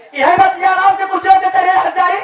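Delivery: furious outburst. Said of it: "आप इतने गुस्से में".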